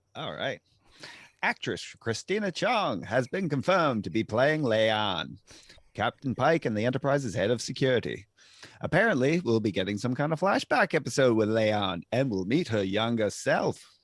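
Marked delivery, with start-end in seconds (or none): 1.4-13.8 put-on low, old-time nineteen-twenties radio announcer voice. Reading Star Trek casting news when asked: 1920s announcer voice. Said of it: "nineteen twenties, uh, announcer voice".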